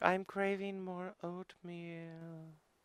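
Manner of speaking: ethereal, faint ghostly half-whisper, pitched very high. Imitating another player's character voice: imitating a ghostly, faint, quiet voice. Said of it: "ghostly, almost. It's very, like, faint and quiet".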